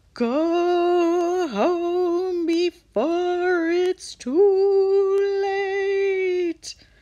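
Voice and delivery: very slow, creepy, high, drawn-out ghostly moan. Reading aloud, a ghost floats up from behind the lobby desk: creepy moaning voice. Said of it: "it moaned in a creepy voice".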